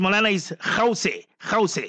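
ordinary talk

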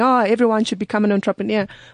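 ordinary delivery

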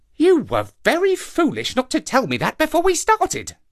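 sudden very high-pitched exclaiming outburst. A narrator reads the monkey Kima replying to Papa, exclaimed. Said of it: "exclaimed Kima".

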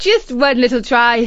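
loud, said through a laugh. Narrator reads Isis answering Katie's pleas to give it back: laughing. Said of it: "But Isis laughed and said".

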